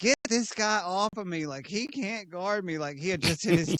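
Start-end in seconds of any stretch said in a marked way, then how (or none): 0.0-2.8 high, drawn-out hollering yell. Retelling a player yelling at the other team's bench: imitating someone yelling. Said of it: "yelling at the, uh, Clippers bench".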